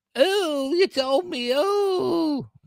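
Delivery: mocking teen bickering voice. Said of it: "she's just like".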